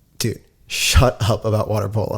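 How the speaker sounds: plain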